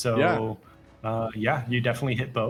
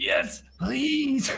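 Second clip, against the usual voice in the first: put-on wheezing voice, pitched much higher; 13 semitones higher than usual. Narrating a game, the speaker voices Olgan accepting a player's help, wheezing. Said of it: "He just wheezes like".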